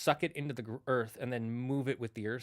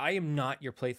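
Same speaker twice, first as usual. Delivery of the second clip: put-on furious goddess voice. Retelling the myth where Thor wants his hammer back: imitating furious Freya. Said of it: "And Freya gets so mad".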